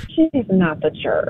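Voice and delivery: softly spoken, hushed and quiet. Giving her verdict on whether the seller is the jerk, saying it softly. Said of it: "Why you say it so soft?".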